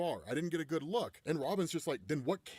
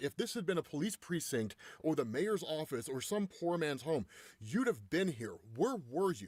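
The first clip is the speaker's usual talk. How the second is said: ordinary talk, nothing marked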